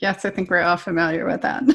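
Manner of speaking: ordinary delivery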